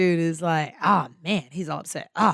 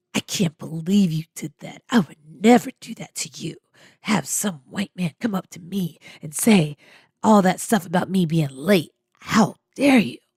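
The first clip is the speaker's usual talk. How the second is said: very evil, sinister, menacing villainous voice. Retelling how a dude leaned in after the manager left, mimicking a very evil voice. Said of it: "he says in this very evil voice".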